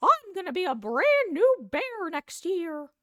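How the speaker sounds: very high, loud voice with drawn-out words. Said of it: "sound like Mickey Mouse".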